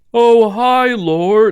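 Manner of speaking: very high, very loud, over-loud delivery. A character greets the lord in a totally-not-suspicious way, speaking very loudly. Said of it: "as I'm speaking like very loudly".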